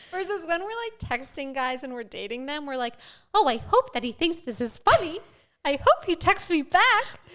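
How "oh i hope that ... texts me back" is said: squeaky, sing-song, loud delivery. Acting out how women sound texting guys they're dating, in a Minnie Mouse voice. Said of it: "What is that Minnie Mouse voice?".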